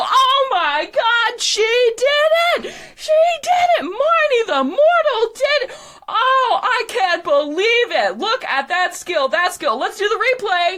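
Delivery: little, very high fairy voice. Describing a scene where a voice is heard, in a little pixie voice. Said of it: "you hear a little pixie voice go".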